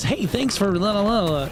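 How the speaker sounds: high-pitched, unhurried voice at the top of the register. Imitating how he always talks in the higher end of his register, high-pitched voice. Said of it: "So he does like this".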